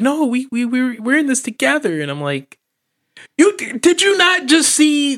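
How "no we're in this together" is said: put-on whining voice, pitched much higher. Retelling her answer after being told she has to go: imitating Kate whining. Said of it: "she's all whining".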